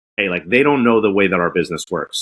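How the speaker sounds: ordinary talk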